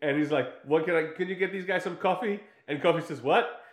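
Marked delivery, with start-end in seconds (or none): 0.6-2.4 high, street gangster-style voice. Retelling a guy walking in and asking for coffee, imitating a gangster. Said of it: "he's all kind of gangster".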